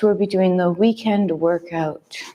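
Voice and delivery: gentle, calm, soothing tone. Co-host opening the weekend workout session, nice calming voice. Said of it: "And in this nice calming voice".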